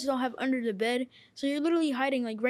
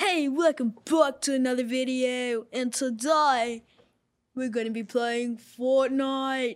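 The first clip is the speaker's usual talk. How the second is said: slower, fake put-on English accent. Joking with a friend about how YouTubers open their videos, in a put-on English YouTuber accent. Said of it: "They be like".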